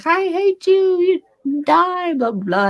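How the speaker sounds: high, slow manic outburst.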